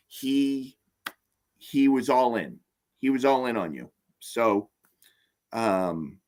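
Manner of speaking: choked-up, moved, emotional speech. Speaker talking about a man, getting a little choked up. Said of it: "you can tell I'm getting a little choked up".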